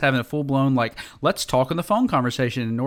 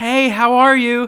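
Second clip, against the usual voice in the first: put-on very high, slow, little-kid voice; 10 semitones higher, 6 dB louder than usual. Retelling a phone call, imitating Nora greeting her grandfather: imitating Nora's phone greeting. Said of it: "That's such a good impression".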